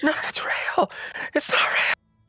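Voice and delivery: slow weeping as the voice fades away. Retelling a story where a man slowly fades away, acting out crying while fading. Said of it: "all he can say as he's like slowly fading and crying".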